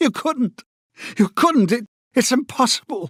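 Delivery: very high, cracking panicked voice. Reading a novel, a man cries out to O'Brien in a high, cracked voice. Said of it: "he cried out in a high, cracked voice".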